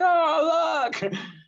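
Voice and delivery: put-on very high, thrilled shriek, "oh" drawn out. Retelling someone grabbing their shoulders at the top of the climb: retelling excited screaming. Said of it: "She's screaming like".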